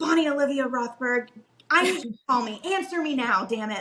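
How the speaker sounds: mock-urgent frantic delivery. Retelling a frantic text to a friend when the queue started moving, mock-urgent demand. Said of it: "I remember texting her like".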